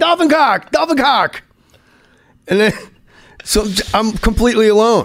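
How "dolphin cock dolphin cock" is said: desperate shouting, pitched up high. Recounting floating there and shouting at a nearby guy; retelling a yell. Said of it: "I start yelling".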